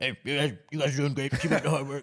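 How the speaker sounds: put-on heavy Cajun accent, high. Retelling how the coach greeted the office staff: Coach O impression with thick Cajun accent. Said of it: "with his thick Cajun accent".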